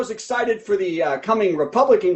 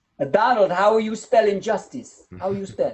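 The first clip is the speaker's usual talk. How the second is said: bad, failed, put-on Slovenian accent. Acting out a joke's quoted line about spelling: bad Slovenian accent impression. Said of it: "that wasn't her accent at all".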